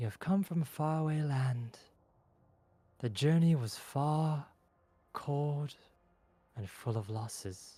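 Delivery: level, flat monotone, like reading off paper. A voice speaks in the two travelers' heads, monotone, as if reading a script. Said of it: "monotone and as if reading from a paper".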